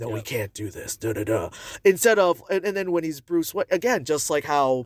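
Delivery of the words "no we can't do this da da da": very low, gruff, roughened, hushed voice. Describing how the actor voices Batman: low gruff Batman voice. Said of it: "it's low and there's a little gruff to it".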